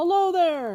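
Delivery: trembling, shaky, very high and loud voice. Narrating Bilbo calling out to a man coming toward him, with a shaky voice. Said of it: "he called with a shaky voice".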